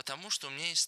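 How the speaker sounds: plain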